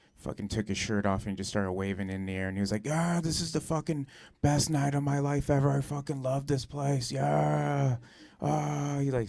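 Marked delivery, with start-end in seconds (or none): 2.9-9.0 play-acted, high, stretched-out drunken screaming. Retelling a drunk friend shouting from a table: imitating a drunk friend screaming. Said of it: "started fucking just screaming".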